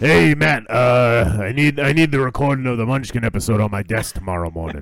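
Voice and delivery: put-on slimy, sleazy executive voice. Pretending to be an executive demanding Matt's recording, slimy greaseball executive voice. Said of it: "I'm doing like slimy greaseball, you know, executive".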